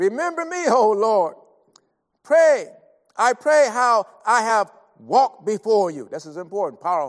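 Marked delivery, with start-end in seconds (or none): 0.0-6.1 loud, slow, pleading crying out. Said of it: "he went to God and, and said".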